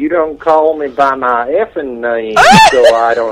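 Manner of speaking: put-on South Brooklyn accent. After explaining where his accent came from, the speaker demonstrates a South Brooklyn accent. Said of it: "If you wanted to hear South Brooklyn".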